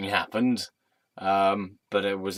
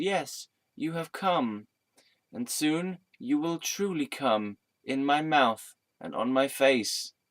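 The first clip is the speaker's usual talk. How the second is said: high, put-on woman's voice; 6 semitones higher than usual. Acting out an imagined woman waiting at the end of the clues: voicing an imagined woman, not deep. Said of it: "not in a deep voice, she says".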